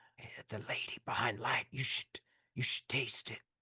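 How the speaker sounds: hushed, breathy, whispered aside. Voicing a man beside a player who urges a taste: whispering. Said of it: "he whispers to you, he says".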